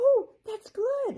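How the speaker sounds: very high, delighted exclaim. From inside a shell, she answers two girls: happy. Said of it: "Amber said happily from inside the shell".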